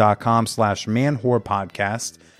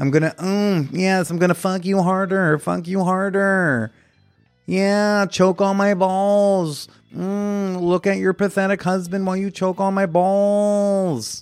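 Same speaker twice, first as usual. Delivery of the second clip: silly put-on bull character voice, pitched high; 9 semitones higher than usual. Acting out a bull who shows up to a husband and wife, in a put-on voice. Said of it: "a guy who sounds like this".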